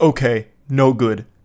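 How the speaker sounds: put-on caveman voice. Reading out a guy's curt reply aloud: imitating speaking like a Neanderthal. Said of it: "Actually speaking like a Neanderthal".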